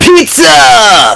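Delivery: very high, loud, stretched-out, stoked surfer-dude voice. Showing how the word pizza should be said: enthusiastic surfer voice. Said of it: "enthusiastically, like a surfer".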